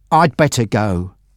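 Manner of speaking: ordinary delivery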